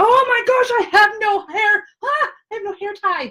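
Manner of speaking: very high, shrill, squealing screech. Realizing there is no hair tie: screaming. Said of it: "Why are you screaming".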